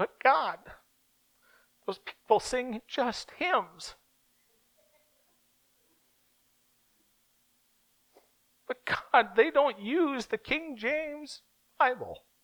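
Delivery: very high, sing-song, whiny voice. Demonstrating a whiny voice while speaking to God, put-on whiny voice. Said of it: "Here's a whiny voice".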